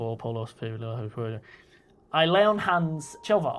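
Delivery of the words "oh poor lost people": muttered, much lower and quieter. Player voicing a character who fell into a pit, muttering under breath. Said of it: "Muttering under my breath".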